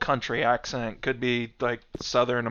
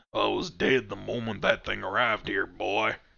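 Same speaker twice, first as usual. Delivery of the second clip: mock country accent; 3 semitones lower, 4 dB quieter than usual. Reading a creature's line from the text aloud in a redneck country accent. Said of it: "he's got like some kind of redneck country accent".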